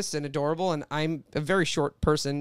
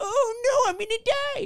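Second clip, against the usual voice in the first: put-on very high little old woman's voice, crying out. Retelling a childhood bit for grandparents: imitating an old woman on the Titanic. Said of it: "I would do this impression of this person".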